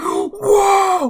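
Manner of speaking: loud, high-pitched screaming. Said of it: "the dude is screamed".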